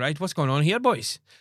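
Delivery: put-on Welsh accent. Retelling how a welsh captain came into the game: imitating a welsh accent. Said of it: "the captain was Welsh".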